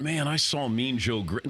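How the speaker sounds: usual speaking voice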